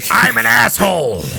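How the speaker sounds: mimicked rough, creaky jerk voice, very high. Voicing a mimicry spell that copies a man's voice: mimicking an asshole's voice. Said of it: "What would you like to say in mimicry?".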